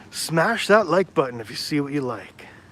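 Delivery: hyped, high-energy online-host delivery. Asking viewers to hit the like button, in an enthusiastic YouTuber voice. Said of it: "do it like an enthusiastic YouTuber".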